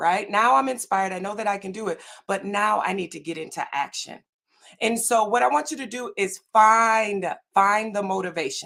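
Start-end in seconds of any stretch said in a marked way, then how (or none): 6.5-7.9 heavy stress on the word "find". Speaker telling the audience what to do next, with stress on 'find'. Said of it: "why am I emphasizing the word find?".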